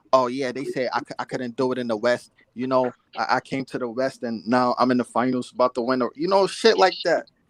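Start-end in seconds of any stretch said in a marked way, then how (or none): 0.1-6.0 bragging with a passive-aggressive edge. Mocking a player's boasts to the media: passive-aggressive LeBron James imitation. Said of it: "his passive aggressiveness".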